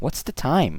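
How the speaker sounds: heavy emphasis landing on the word time. Showing how to ask the time, with stress on the word time. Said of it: "You see that stress and intonation on the word time?".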